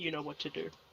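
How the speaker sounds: very quiet, barely audible half-whisper. Speaking in character, quietly giving an ally an instruction: half-whisper. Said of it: "and then I kinda whisper".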